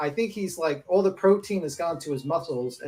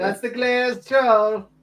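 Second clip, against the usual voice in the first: high cartoonish character voice; 6 semitones higher, 4 dB louder than usual. Repeating a joke nickname, then told it sounds like the cereal leprechaun: Magically Delicious leprechaun voice. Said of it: "sounded like the fucking leprechaun from".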